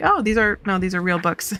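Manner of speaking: usual speaking voice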